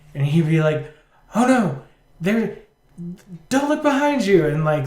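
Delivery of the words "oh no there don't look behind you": freaked-out, panicked, urgent voice, pitched up. Retelling a childhood prank warning, imitating someone freaking out. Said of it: "start freaking out".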